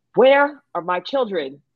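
play-acted, demanding, drawn-out yelling call. Retelling a father arriving at the school: imitating father yelling.

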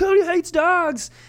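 high, slow mocking voice. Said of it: "people can be like".

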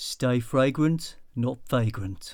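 put-on Birmingham accent. Asked whether they can do a Brummie accent, someone tries a line: Brummie accent. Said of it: "You can do a sort of Brummie accent, can't you?".

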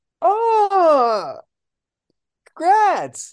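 high, loud fake jealous gushing. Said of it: "it's not a genuine congrats".

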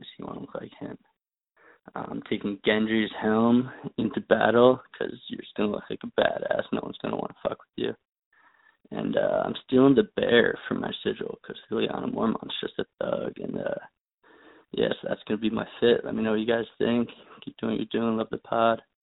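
creaky voice, heavy vocal fry throughout. A listener leaves a phone message for a podcast, with heavy vocal fry. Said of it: "A lot of vocal fry there".

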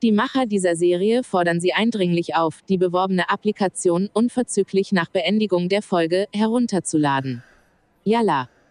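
put-on robotic assistant voice. Quoting an app ad read out in a series, in a Siri robot voice. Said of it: "so eine Siri-Roboterstimme".

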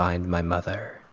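hushed, barely audible low half-whisper. Player in role pulls a character in face to face: half-whispering very quietly. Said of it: "I try to whisper as quietly as I can".

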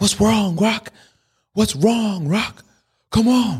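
shrill, very high-pitched shout. Retelling a Rocky movie scene: imitating Apollo Creed yelling. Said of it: "he's yelling at Rocky".

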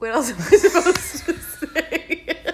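loud laughter running through the words.

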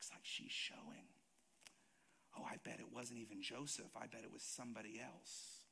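sly, hushed whisper. Acting out town gossip about a pregnancy: imitating townspeople whispering. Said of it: "People would be whispering".

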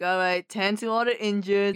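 ordinary delivery

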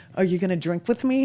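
plain

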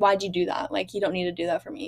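mock-annoyed, put-on annoyed tone. Retelling a woman's reaction to a man opening the door, mock-annoyed. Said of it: "like annoyed that he had opened the door".

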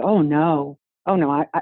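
ordinary delivery

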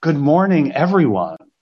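warm, enthusiastic voice with a big smile.

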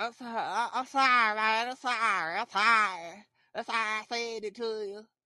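play-acted, slow, drawn-out, repeated apologetic tone. Retelling people trying to apologize: imitating someone apologizing. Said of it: "Trying to apologize".

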